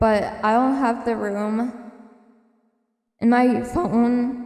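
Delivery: voice breaking and cracking. Sharing favorite memories with listeners; voice cracking. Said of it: "my voice cracked".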